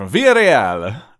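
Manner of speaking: loud, slow mock French accent, "Villarreal" said slowly.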